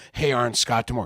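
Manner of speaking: plain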